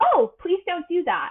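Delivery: cheerful, sunny, happy high tone. Showing how to set a boundary directly: happy, higher tone. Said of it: "very direct language in a happy, higher tone".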